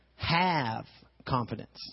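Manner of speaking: stress on have, slow and weighted.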